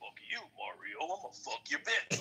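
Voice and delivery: deep growling monster voice. Doing a character voice for a game villain as he hurls insults at his rival, in a deep growling monster voice. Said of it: "Mario had a moment".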